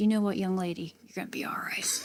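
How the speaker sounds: put-on raspy sergeant major voice. Retelling how the sergeant major answered her, in a raspy sergeant major voice. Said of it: "that really raspy voice".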